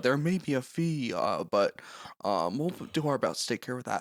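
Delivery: mimicked watery voice. Imitating TikToks that mock an HR-style speaker: watery voice. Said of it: "Watery voice".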